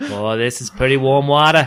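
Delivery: put-on Boston accent. Voicing a talking hot tub after another speaker says it sounds Boston: Boston accent. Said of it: "It has a Boston accent".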